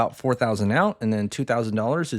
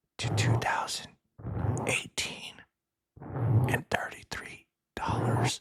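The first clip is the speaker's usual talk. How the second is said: hushed whisper, much quieter; 7 dB quieter than usual.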